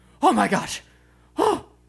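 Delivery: very high, breathless, gasping, excited delight. Retelling how she reacts in a video, imitating breathless excitement. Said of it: "running out of breath because she's so excited".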